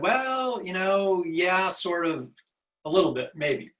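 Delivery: mock tactful, noncommittal, diplomatic hedging tone. Retelling own reply to a caller asking for help: imitating own diplomatic hedging reply. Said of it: "I kind of diplomatically said".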